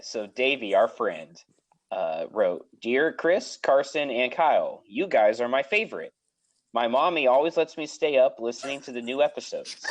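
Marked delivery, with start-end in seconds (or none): none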